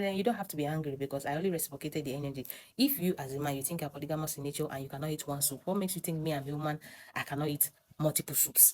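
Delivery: ordinary delivery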